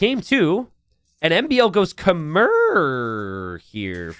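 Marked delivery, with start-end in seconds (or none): 1.9-4.1 voice breaks on a stretched, drawn-out Khmer. Commentating a match as the next game starts, with a voice crack. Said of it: "Forgive my uh, my voice crack".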